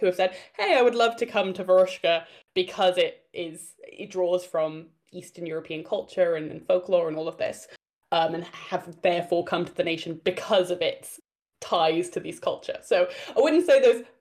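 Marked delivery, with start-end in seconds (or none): none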